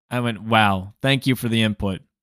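ordinary talk

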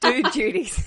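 loud, fake put-on American accent. Repeating a phrase the other speaker used: put-on American accent. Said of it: "as I say in my American accent".

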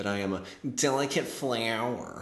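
goading, needling, antagonizing, taunting tone. Quoting what Delaney always says about her allergies: imitating Delaney's antagonizing voice. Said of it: "in the most antagonizing voice ever".

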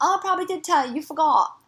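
poor put-on British accent, high-pitched. Retelling what a man replied about not being told: bad British accent. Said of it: "what accent are you doing right".

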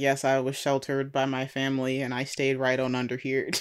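ordinary talk

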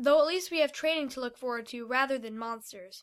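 ordinary delivery, nothing marked

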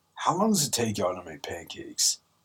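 put-on, slightly annoyed, soft tone. Retelling what they asked her before she left, in a mock-annoyed tone. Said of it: "I asked her in a bit of an annoyance tone".

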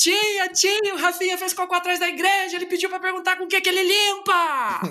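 mock child voice, high and shouted. Retelling how a friend shouted in church during Sunday Mass: imitating a friend shouting. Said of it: "e ele gritando na igreja".

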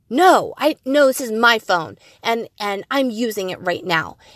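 put-on short-tempered, irritated snapping retort. Retelling the urge to snap at her son over the phone: imitating snapping at her son. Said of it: "wanting to snap at my son".

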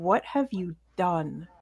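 quiet whispering voice. Voicing a presence speaking in the players' heads: soft whisper. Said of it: "You hear a soft whisper in your head going".

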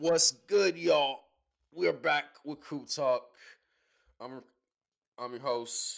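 stammering, very loud, high-pitched stuttering delivery. Opening the crew talk show as its host, stuttering intro. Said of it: "you stutter like a motherfucker".

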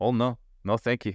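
poor, clumsy put-on French accent. Declining when asked for a seat in a skit: bad fake French accent. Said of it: "I apologize for my accent that is not very good".

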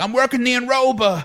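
put-on Long Island accent. Imitate one of the guys who worked there, in a gruff Long Island dude voice. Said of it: "gruff Long Island dudes who were like".

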